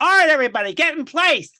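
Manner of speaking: shrill, booming, flamboyant voice belted high.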